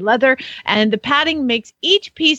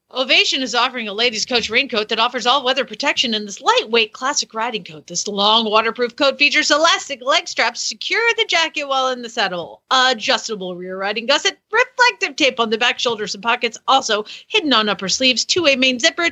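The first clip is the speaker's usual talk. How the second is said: normal talking voice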